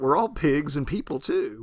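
ordinary delivery

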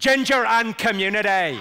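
loud Northern Irish accent, Belfast style. Teaching the audience the phrase used to get the Belfast accent right. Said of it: "the phrase I use to get the Belfast accent right".

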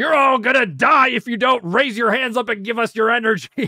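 furious, very high-pitched screaming. Retelling how Vegeta speaks to the Earthlings: imitating Vegeta screaming. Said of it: "just starts screaming at them like".

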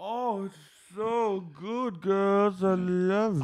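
mock drunk gush, very high, slow and drawn out. Describing Lisa's transformative moment with a sandwich: imitating Lisa drunk. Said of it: "She's wasted".

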